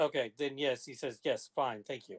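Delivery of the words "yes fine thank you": very short, curt, clipped delivery. Voicing a character answering through a mind link: very short and clipped. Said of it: "Very short and clipped".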